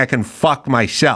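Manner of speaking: ordinary talk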